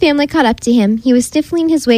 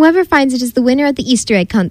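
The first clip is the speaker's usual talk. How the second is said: ordinary delivery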